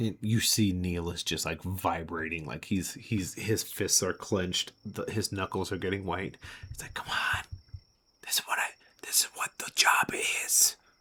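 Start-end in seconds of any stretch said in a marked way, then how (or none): 6.9-10.7 breathy under-the-breath whisper. Speaker narrating a scene and voicing a character's thoughts, whispering. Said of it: "I actually whispered".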